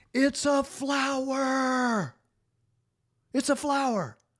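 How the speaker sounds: put-on very high squeal, "flower" stretched long. Retelling what she screamed while squatting by a plant, imitating a top-of-voice scream. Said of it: "she screams at the top of her voice".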